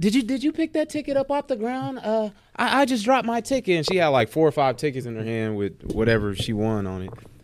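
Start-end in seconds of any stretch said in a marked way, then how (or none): 0.0-3.8 frantic, very high-pitched panicking lady's voice. Recounting a lady who says the speaker picked up her ticket, imitating a frantic, panicking woman. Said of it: "She's like all frantic and panicking".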